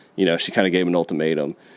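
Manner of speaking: plain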